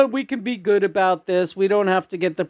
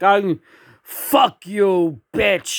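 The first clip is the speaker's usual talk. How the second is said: mock drunk man voice. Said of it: "you're drunk out of your skull".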